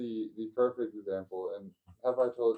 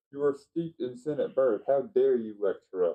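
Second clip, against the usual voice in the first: ordinary talk, nothing marked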